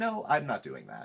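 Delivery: ordinary talk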